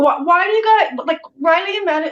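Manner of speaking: mock high screaming outburst. A mom retells a morning when she screamed at her kids: retelling a scream. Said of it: "I'm screaming at my kids".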